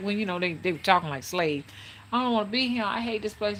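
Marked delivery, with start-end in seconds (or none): 2.1-3.6 tearful pleading, crying through the words. Retelling what a crying girl said: imitating crying speech. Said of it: "She was crying".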